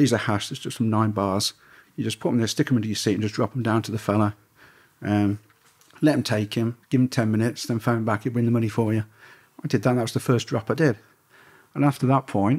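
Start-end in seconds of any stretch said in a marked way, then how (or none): none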